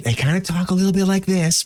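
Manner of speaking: put-on whispery actor voice. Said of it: "It's like the whisper acting".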